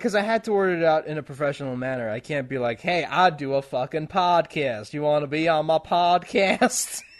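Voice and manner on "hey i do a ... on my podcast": slow, drawn-out, put-on Southern American accent. Imagining an unprofessional podcast invitation, in a put-on Southern accent. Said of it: "Don't know why he's Southern".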